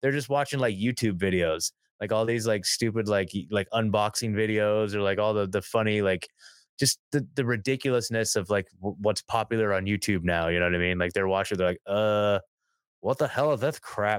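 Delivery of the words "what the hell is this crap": slow cartoon voice, every word drawn out. Imitating Beavis and Butthead mocking YouTube videos: Beavis and Butthead impression. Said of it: "that was really fucking good".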